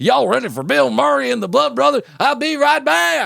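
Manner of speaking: put-on rural drawl. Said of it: "Redneck voice".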